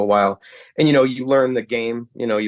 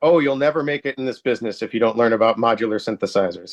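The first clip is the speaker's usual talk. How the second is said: mock, very sarcastic delivery. Retelling a man's answer to questions about modular synthesizers, imitating a very sarcastic tone. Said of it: "very sarcastically".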